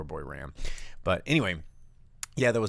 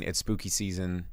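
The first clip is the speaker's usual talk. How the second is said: ordinary delivery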